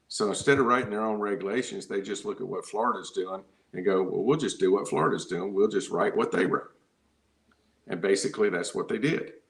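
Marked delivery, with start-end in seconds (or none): 4.0-6.7 mocking, sarcastic, put-on delivery. Retelling what state regulators said about copying Florida: imitating officials sarcastically. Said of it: "I'm gonna be sarcastic".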